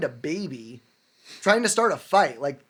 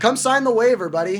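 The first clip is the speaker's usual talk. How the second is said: calm but loud talk, higher and louder; 4 semitones higher, 5 dB louder than usual. Retelling own words to a neighbour who wanted to fight: calm but loud. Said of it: "I kinda calmly tell him, like, and loudly".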